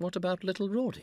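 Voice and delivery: very high, tender, swooping sing-song voice. Rawdon asks Becky about their son, tender. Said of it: "Rawdon asked tenderly".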